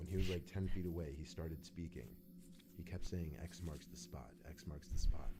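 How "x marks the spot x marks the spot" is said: ordinary talk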